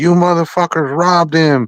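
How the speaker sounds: high-pitched angry yelling. Retelling a commentator's outburst when a fighter got robbed: imitating Teddy yelling. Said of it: "he was standing up and yelling and saying".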